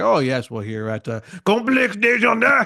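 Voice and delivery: fake French accent. Imitating a speaker saying a business's name: imitating a put-on stereotypical French accent. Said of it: "coming up with a stereotypical French character".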